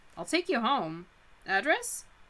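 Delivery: ordinary delivery, nothing marked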